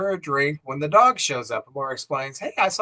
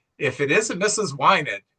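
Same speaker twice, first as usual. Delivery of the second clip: ordinary talk, nothing marked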